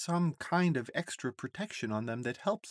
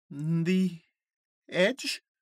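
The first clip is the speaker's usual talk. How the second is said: uneasy, worried, nervous, with raised pitch; 2 semitones higher, 5 dB louder than usual. Jojo questions the others' plan to go somewhere forbidden; nervous question. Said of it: "Asks Jojo nervously".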